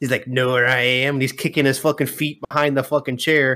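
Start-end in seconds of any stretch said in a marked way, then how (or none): 0.3-1.1 creepy, teasing horror-villain voice. Retelling how PJ hid behind a chair, mimicking a scary-movie voice. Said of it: "he's mimicking the fucking scary movie one".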